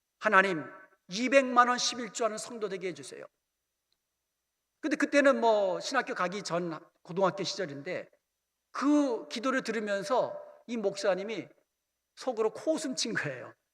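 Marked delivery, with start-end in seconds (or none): none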